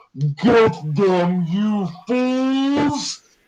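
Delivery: booming, resounding, very high cry, "fools" drawn out. Voicing a call out of a cave during a game turn: booming voice. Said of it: "a booming voice out of the cave just go".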